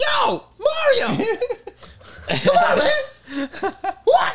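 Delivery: very high, very loud, slow, drawn-out shriek. Guessing what Charlie Day's Luigi will sound like, super high-pitched screaming. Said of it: "Just super high-pitched voice screaming".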